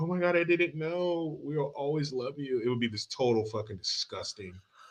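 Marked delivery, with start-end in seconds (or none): 0.0-2.6 soft, weepy, tearful crying voice. Speaker acts out how she would react to the news: imitating someone crying. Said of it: "She's like crying".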